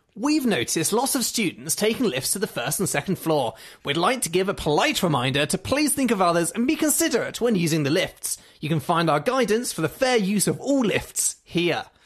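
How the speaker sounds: really snooty, haughty, superior reading voice. Speaker reads out a passive-aggressive notice about the lifts, in a mock-snooty voice. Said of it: "Shall I read it out in a really snooty voice?".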